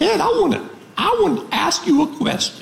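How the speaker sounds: put-on very high, distinctive Southern accent. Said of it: "She has a one-of-a-kind Southern accent".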